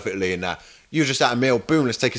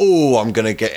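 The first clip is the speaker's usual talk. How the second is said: ordinary talk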